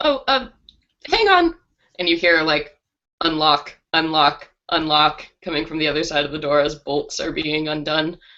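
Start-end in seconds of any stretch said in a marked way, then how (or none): 0.0-1.5 very high, squeaky, mouse-like voice. Narrator voicing a woman answering visitors through her door, mousy voice. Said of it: "a kind of mousy voice".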